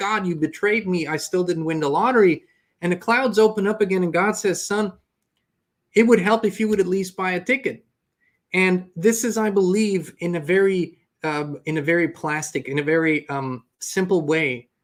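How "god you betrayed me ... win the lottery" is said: ordinary talk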